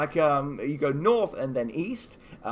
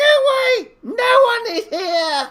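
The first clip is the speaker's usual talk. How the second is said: tiny, shrill, very high, very loud little cry; 10 dB louder than usual. Narrating a game, a hidden voice answers the player's call: tiny voice. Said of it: "you hear a tiny voice going".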